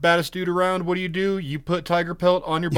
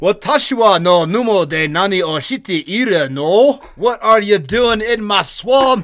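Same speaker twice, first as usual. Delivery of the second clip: put-on Japanese accent. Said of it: "And just for fun".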